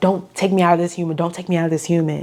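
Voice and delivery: mock pleading in a put-on demon voice. Retelling a Bible passage, the speaker acts out the demon begging Jesus, pleading. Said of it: "the demon is literally pleading with Jesus".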